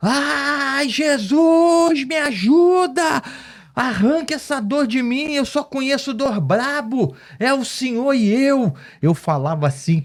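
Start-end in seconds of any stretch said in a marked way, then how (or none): 0.0-8.7 put-on very high, slow, drawn-out yell, stretching "ai". Retelling his hospital pain, crying out to Jesus: imitating his own past screaming. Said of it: "E sabe o que que eu gritava?".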